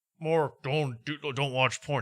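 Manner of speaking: mocking put-on god voice. Retelling a comedian's bit where he mocked God talking to you: Tony Hinchcliffe's mocking fake God voice. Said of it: "pretending to talk to God in a mocking way".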